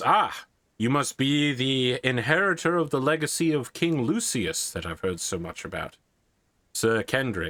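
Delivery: put-on Roman-style Italian accent. Voicing a knight greeting another knight, italian accent. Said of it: "you hear him speaking with a Latin accent".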